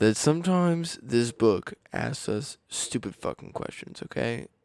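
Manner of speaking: deep voice. Starting to read out a question to the other speaker: deep voice. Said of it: "Talking that deep voice more".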